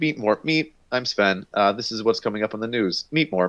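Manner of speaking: bad German-accented robot voice. Retelling how a german robot character on a show talks: imitating a german robot character. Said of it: "He's a German guy, and he's just like".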